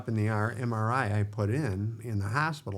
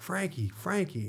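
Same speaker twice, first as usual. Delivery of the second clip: high, pitched-up yell in agony; 7 semitones higher, 4 dB quieter than usual. Speaker retells yelling to Frankie while down on the floor. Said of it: "I yell to Frankie".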